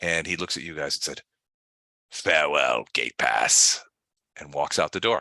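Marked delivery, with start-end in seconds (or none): 2.1-3.8 dark, low, demon-like voice. Narrating a scene, the speaker voices a character leaving, in a demonic voice. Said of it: "It's it's a demonic voice".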